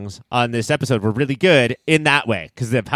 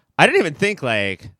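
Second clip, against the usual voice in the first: ordinary talk, nothing marked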